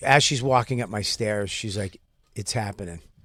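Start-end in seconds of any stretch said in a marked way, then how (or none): 2.3-3.0 mock cocky tone, lower and quieter. Retelling what she said walking up the stairs: imitating a cocky tone. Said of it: "kinda cocky".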